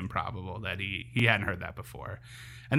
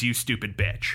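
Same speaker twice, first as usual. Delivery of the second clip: usual speaking voice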